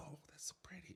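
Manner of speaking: soft, breathy, close whisper. Retelling how someone whispered in their ear during fireworks: imitating someone whispering. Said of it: "whispering in my ear".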